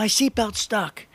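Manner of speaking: play-acted call, voice pitched high. Recounting a man stuck in a smoking car, retelling a shout out the window. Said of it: "he shouts out the window".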